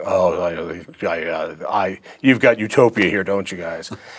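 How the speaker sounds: low, slow, drawn-out, dismissive scoff. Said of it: "rolling his eyes, going".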